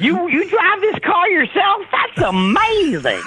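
very high, swooping, gushing, delighted sing-song voice. Imitating a California TV host who finds everything happy: Huell Howser impression. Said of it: "He's like".

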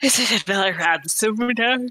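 speaking through a yawn. Player asking the game master about a found note, yawning while talking. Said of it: "I yawned when I was trying to say that".

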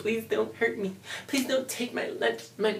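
put-on scared, fearful pleading. Acting out someone begging not to be hurt: mock fearful pleading. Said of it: "they feed off of your anguish, your pain ... I know I'm a good actor".

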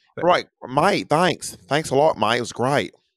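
bad fake Australian accent. Retelling someone thanking him for a tip, in a bad australian accent. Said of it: "Don't even ask me to try to do an Australian accent".

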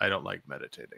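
mock absolute deadpan, very soft. Retelling what a man said at meditation, imitating his absolute deadpan. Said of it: "Just absolute deadpan".

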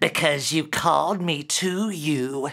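hissed, foul goblin voice. Reading a story, the demon answers Derek's question, hissing goblin voice. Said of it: "hissed the foul goblin".

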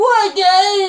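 squeaky, very high, very loud shouted squeal. Imitating a wrestler who comes out shouting: squeaky Scott Steiner voice. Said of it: "the whole squeaky voice, like Scott Steiner".

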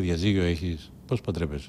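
plain

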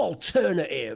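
put-on American accent and intonation. Describing a man who switches between American and British, American intonation. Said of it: "got this like American intonation".

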